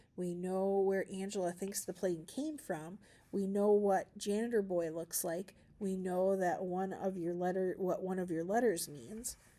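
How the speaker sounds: ordinary delivery, nothing marked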